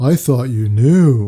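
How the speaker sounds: suddenly deep, loud, manly voice. Retelling a date's surprise reply, in a voice deeper than mine. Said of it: "in a voice deeper than mine".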